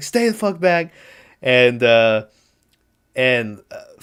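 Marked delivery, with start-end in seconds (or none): 0.0-0.9 mock raging, furious high-pitched scream. Speaker retells an actor's movie scene, retelling a furious scream. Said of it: "he's just screaming at him".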